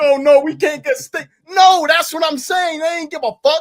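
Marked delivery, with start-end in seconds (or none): 0.0-1.3 fake, whimpering crying whine. Mocking the company as if crying over losing a wrestler: mock crying. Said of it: "went back crying like".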